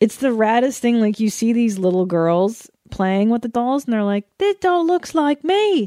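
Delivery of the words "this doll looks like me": put-on Tasmanian accent. Act out little girls talking as they play with dolls, in a put-on Tasmanian accent. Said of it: "I'm doing a Tasmanian accent".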